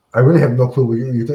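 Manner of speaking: smarmy, dismissive, offhand, matter-of-fact tone. Retelling a movie clip where Lex waves off Superman: imitating Lex Luthor, smarmy and dismissive. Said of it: "dismissive in that smarmy, you know, jackass kind of Lex way".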